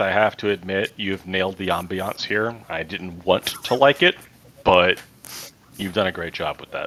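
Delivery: grudging, reluctant, through gritted teeth. Admitting something in character against one's will: through gritted teeth. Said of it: "through gritted teeth".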